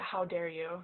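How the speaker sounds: hushed, under the breath. Speaking in character so no one else in the group hears: quiet, hushed. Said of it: "quietly so that I think no one else in my group can hear it".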